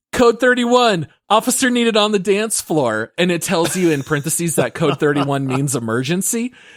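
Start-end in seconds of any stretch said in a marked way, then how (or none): 0.1-3.1 high-pitched, loud yelled call-out. Retelling a game scene, calling Kim onto the dance floor: retelling own yelling. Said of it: "And I start yelling".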